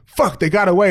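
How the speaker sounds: angry outburst. Retelling a movie scene where he gets up after flying through the bus: imitating someone physically mad. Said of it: "just fucking physically mad".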